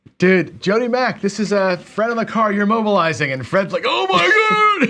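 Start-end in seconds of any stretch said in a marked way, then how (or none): 3.9-4.9 put-on frantic, very high-pitched, hysterical yell. Imitating a sports radio caller yelling from his car: imitating a hysterical caller yelling. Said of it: "they're going hysterical on the phone".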